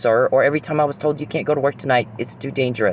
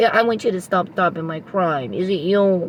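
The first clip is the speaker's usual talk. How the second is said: mock whiny voice, higher; 5 semitones higher than usual. Mocking the criminal calling around to ask questions: mock whiny voice. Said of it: "Whiny, whiny".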